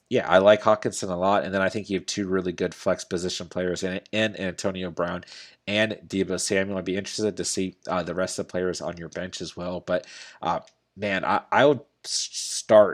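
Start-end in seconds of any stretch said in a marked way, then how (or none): 9.8-12.9 very slow, halting, stumbling, stuttering start. Giving advice on a flex position player, stuttering. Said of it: "like stuttering over here".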